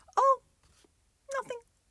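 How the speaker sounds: small, very high little voice. A girl who nearly gave something away answers a question, in a tiny voice. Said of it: "said Davina in a tiny voice".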